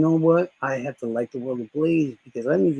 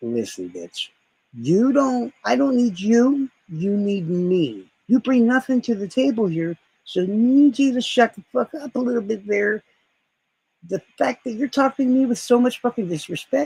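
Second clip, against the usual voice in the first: high, furious cussing-out tirade; 7 semitones higher than usual. Retelling the third time being yelled at: retelling going off on someone. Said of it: "the switch went off".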